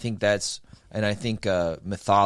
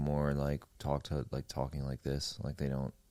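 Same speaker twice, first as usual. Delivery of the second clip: flat, toneless, low, quiet monotone without emotion; 5 semitones lower, 11 dB quieter than usual. Describing how some people talk, demonstrating it in monotone. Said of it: "They have like a monotone structure to their speaking".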